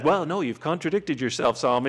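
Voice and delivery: put-on condescending tv host voice. Acting out Alex Trebek answering Solomon, as a mock-condescending Alex Trebek. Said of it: "If Alex Trebek condescendingly says".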